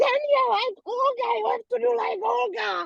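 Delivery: high, shouted screaming voice.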